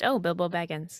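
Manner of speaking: affected, put-on British accent. Imitating a movie character's line: put-on british accent. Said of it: "the British accent was just".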